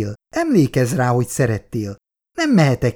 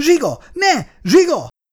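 very high, shrill, piercing scream. Angéla cries out as zsiga threatens her and the child, screaming. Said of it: "Sikította Angéla".

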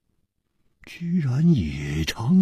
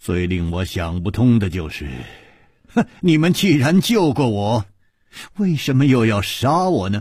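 ordinary delivery

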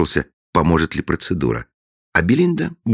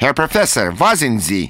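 sonorous, carrying, ringing shout, pitched high; 6 semitones higher than usual. Narrator reads an unseen caller at the door calling the professor, resounding shout. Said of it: "чей-то звучный голос крикнул".

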